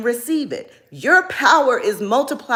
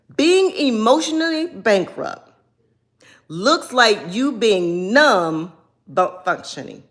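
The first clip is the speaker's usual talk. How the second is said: slow, deliberate reading, each word drawn out. A speaker reads a passage aloud to the audience, reading slowly. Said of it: "I'm going to read it slow".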